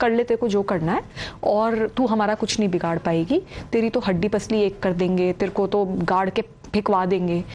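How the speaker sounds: plain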